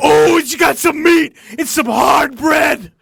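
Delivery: very loud, high, belted character voice. Imagining how Aleister Crowley talked, in an Aleister Crowley impression. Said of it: "I always imagine Alistair Crowley just always going like".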